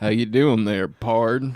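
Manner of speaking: put-on cowboy voice. Joining the other speaker's midwest tangent bit, greeting them in a cowboy voice. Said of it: "make it a sound thing for Midwest tangent".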